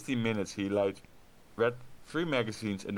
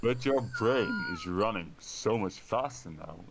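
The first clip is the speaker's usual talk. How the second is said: deep, smoky sultry voice, slow and swooping. Reading a woman character's line aloud: deep sultry voice. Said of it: "their voice got deeper just now".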